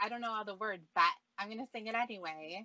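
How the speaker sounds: normal talking voice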